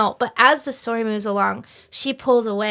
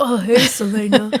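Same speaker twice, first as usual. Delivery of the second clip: put-on, fake male voice; 3 dB louder than usual. Trying out the narrator's man voices for the others: put-on man voice. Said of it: "I try and talk like that sometimes".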